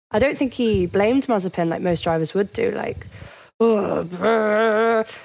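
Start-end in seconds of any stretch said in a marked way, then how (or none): 3.6-5.0 put-on irritated, angry brr sound, long and drawn out. Imitating how most drivers would react after a crash: imitating an angry F1 driver. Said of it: "the common noise of an angry F one driver".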